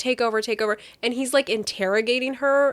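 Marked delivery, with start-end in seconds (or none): none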